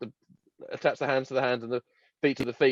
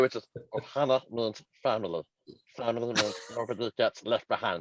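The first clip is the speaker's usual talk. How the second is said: cartoon alien voice, quieter; 4 dB quieter than usual. Trading cartoon voice impressions during an episode, doing a Stitch voice.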